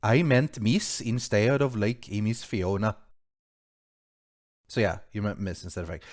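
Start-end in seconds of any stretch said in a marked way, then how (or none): 0.0-3.0 slow, drawn-out, put-on Swedish accent. Reading out a donation message aloud after text-to-speech failed: swedish voice. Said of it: "I'll read it out in a Swedish voice".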